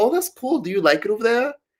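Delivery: put-on very high, bubbly, upbeat Canadian accent. Retelling chatting with a woman born in Toronto, the speaker does a put-on upbeat Canadian accent. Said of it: "I was doing the little like positive".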